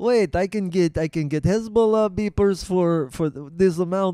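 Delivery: put-on Russian-accented delivery. Acting out what the man buying the beepers thought, in a Russian accent. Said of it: "I'm doing Russian".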